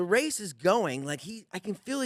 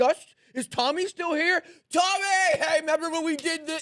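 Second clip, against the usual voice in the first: put-on yell, higher and louder; 10 semitones higher, 5 dB louder than usual. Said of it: "he's just yelling in the back".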